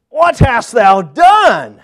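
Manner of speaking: loud, high, drawn out, laden with attitude. Reading a verse where someone confronts the king: said with attitude. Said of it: "I'm going to say it with attitude".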